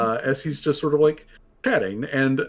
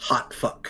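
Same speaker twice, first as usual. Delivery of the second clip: hushed voice, quieter; 3 semitones lower, 5 dB quieter than usual. Voicing a creature who points out a stranger to a companion: quiet voice. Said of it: "he says quietly".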